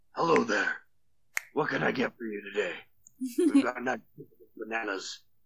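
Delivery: put-on gravelly superhero voice. Voicing a shop clerk greeting players: Batman voice. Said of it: "talks like Batman".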